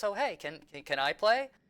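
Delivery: sweet, endearing, cute high little voice. Retelling someone asking to join in playing, in a cute, soft voice. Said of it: "I hear in this very like cute, soft voice".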